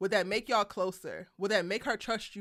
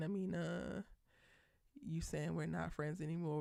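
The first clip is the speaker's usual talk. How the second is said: put-on cracking, breaking voice; 4 semitones lower, 12 dB quieter than usual. Quoting the character Khalil pleading with Amina: imitating a voice cracking. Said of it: "with his voice cracking".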